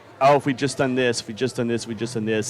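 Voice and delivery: ordinary delivery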